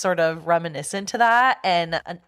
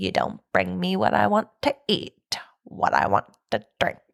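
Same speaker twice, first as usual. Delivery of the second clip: creepy, unsettling, rough, creaky put-on voice. Quoting how a man demands food and drink, in a creepy voice. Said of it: "the way he says it is so creepy".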